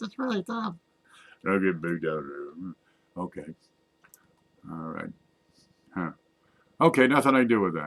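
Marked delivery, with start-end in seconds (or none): 0.0-0.7 put-on squeaky voice, very high and soft. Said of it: "I have to talk like a squeaky voice".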